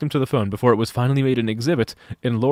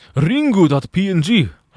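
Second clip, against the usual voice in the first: put-on Romanian accent, pitched up; 6 semitones higher, 3 dB louder than usual. Making a joke about the name ringu in a put-on romanian accent. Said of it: "Why did I do that in, like, a Romanian accent?".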